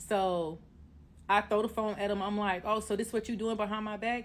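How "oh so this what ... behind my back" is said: ordinary talk, nothing marked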